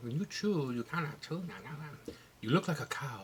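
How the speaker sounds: put-on Portuguese accent, soft. Quoting the speaker's mother commenting on the videos, in a portuguese accent. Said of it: "in a Portuguese accent".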